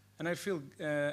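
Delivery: normal talking voice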